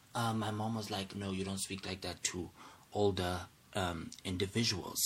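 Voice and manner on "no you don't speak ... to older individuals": usual speaking voice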